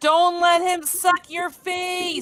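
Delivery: put-on slow, stretched-out, drawn-out mild yell. Playing a character in a game, warning others: screaming in character.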